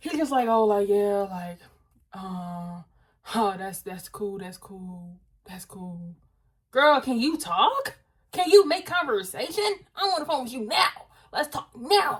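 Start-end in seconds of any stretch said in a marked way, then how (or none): 0.5-6.1 imitated deep male voice, lower. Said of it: "you just deep, just deep".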